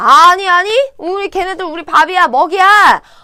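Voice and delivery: high, loud, confident rallying delivery.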